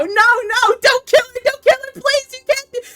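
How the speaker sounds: very high, begging, pleading voice through sobs. Retelling hearing a roommate in the next room: imitating someone begging and sobbing. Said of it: "I hear Moki begging and sobbing".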